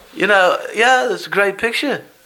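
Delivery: high, upbeat, friendly voice kept up. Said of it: "he sounds just like him".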